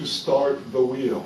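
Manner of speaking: slowed down, deliberate, carefully spelled-out delivery. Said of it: "I'll break this down and I'll speak slower".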